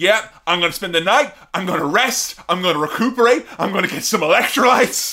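loud, fired-up, pumped-up, intense voice. Imitating a competitor talking about tomorrow's challenge: imitating an intense competitor. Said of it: "She's so fucking intense".

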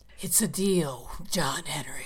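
very slow voice like bat wings on tombstones. Performing a line on request: voice like bat wings on tombstones. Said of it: "as a voice sounding like bat wings on tombstones".

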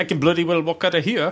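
clumsy, bad put-on Scottish accent. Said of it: "Ever try to do a Scottish impression".

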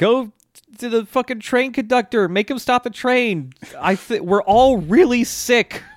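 mock yelling. Retelling how a man yells at Pesci to stop the train, retelling a yell. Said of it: "he's just yelling at Pesci".

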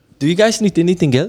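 put-on Spanish accent.

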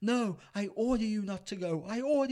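very high, tearful, sobbing, broken-down crying. Retelling a film scene where John Connor breaks down: imitating John Connor crying. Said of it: "he breaks down, he's crying".

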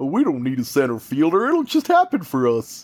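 goofy cartoon moose voice. Imitating a baseball front office's thinking: imitating, sounds like Bullwinkle. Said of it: "anybody I imitate just sounds like Bullwinkle".

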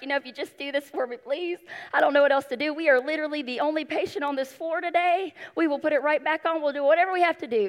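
mock pleading, begging hard, sounding desperate. Retelling own plea to a nurse: imitating own pleading. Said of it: "I'm begging, I'm pleading. I'm like".

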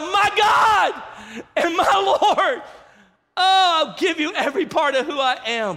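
very high, very slow, drawn-out yell. Retelling how Thomas cried out after his encounter: imitating a yell. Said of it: "he yells out".

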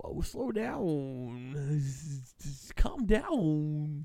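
horrible wannabe voice, very slow, "down" drawn out. Joking around on air, then a horrible Christopher Walken impression. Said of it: "a horrible Christopher Walken wannabe".

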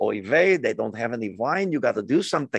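put-on Yiddish-inflected accent.

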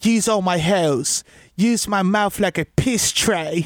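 slow, drawn-out, put-on Australian accent. Retelling what a woman in a video said: imitating an australian accent. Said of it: "so she had the accent".

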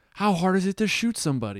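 shrill, very high, swooping yell. Retelling a line from a film shootout scene: imitating someone yelling. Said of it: "he's just yelling".

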